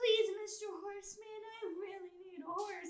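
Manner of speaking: put-on tiny pleading child voice, very high. Retelling how a tiny fighter asked a man for a horse, in a put-on child voice. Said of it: "It was like the child voice".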